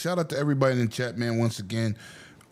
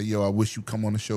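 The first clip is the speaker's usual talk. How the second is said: ordinary talk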